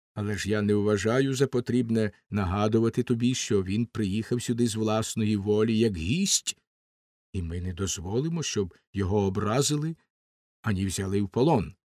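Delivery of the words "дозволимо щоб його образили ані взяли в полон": ordinary delivery, nothing marked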